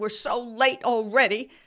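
shrill, high, loud fishwife-style yelling. Stopped at a light while lost driving with him, retelling her own yell. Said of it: "And I'm yelling".

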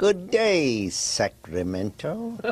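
evil cartoon-villain voice, high and swooping. Guest on a show, asked by the host to greet Sacramento: Skeletor voice. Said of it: "Say in your best Skeletor voice".

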